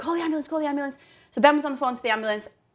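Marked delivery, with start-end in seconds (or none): 0.0-1.0 put-on shout, much higher pitched. Recalling people shouting for an ambulance in an emergency, retelling a shout. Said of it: "they were just shouting".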